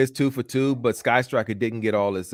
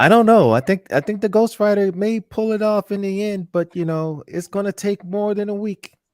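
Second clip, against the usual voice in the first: shrill, very high, loud put-on character voice; 11 semitones higher, 5 dB louder than usual. Commenting on the Ghost Rider funding: Brink voice. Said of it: "in my Brink voice".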